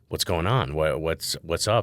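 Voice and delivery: ordinary talk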